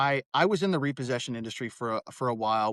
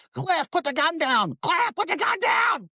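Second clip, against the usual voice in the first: very high, loud, swooping scream; 5 dB louder than usual. Retelling a late-night story, voicing the guy's wife screaming at him; imitating a wife screaming. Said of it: "she's screaming at him".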